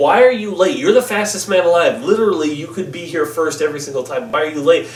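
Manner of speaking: ordinary talk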